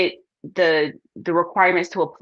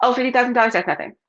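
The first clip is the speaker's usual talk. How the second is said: airy, breezy, pitched-up, offhand, casually dismissive voice; 5 semitones higher than usual. Retelling advice on how to talk about money: imitating saying it like it's nothing. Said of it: "You have to say it like it's nothing".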